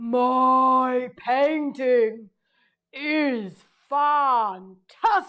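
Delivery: loud, very slow creature voice. Doing a line in an animal's voice for another to guess. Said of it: "I'll do one and you have to guess the animal".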